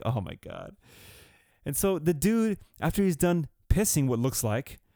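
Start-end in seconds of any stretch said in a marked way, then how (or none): 0.0-0.8 spoken half-laughing, laughing through the words. Retelling a stranger's odd behaviour in a restroom, imitating own laughing. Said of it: "and so I'm kinda laughing, like".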